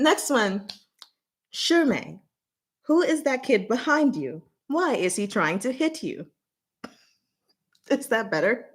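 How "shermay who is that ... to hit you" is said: level, even automated-system reading voice. Speaker reads a line using the voice they use for the system. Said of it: "I'm gonna use the voice I use for um, the system".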